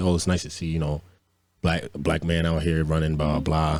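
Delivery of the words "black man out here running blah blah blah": ordinary talk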